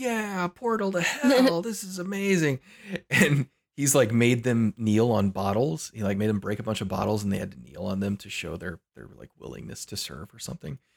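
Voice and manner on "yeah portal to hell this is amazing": mock thrilled gushing, very high and drawn-out. Retelling how a leader's followers reacted to a portal, imitating super-excited followers. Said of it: "getting super excited".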